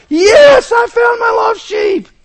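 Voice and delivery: shrill, very high, very loud, rejoicing scream. Acting out the shepherd who finds his lost sheep, retelling a scream. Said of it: "He's screaming".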